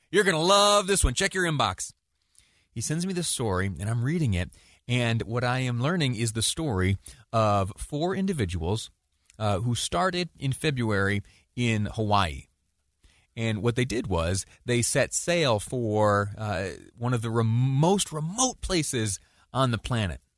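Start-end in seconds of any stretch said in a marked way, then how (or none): 0.1-1.9 high, mock yell, projected far. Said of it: "yells over to me".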